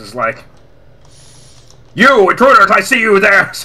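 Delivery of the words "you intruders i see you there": booming voice like a public-address announcer. Narrating to the players as an enemy commissar spots them, booming Commissar Dominic voice. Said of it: "very familiar commissar's voice".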